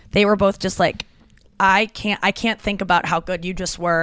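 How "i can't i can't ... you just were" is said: ordinary talk, nothing marked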